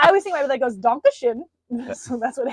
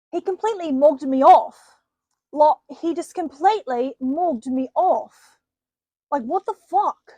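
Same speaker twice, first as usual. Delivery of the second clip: put-on plummy upper-class English accent; 2 semitones higher than usual. Asked to do a posh British accent, giving it a go. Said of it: "Give me a posh British accent".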